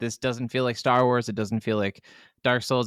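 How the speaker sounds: ordinary talk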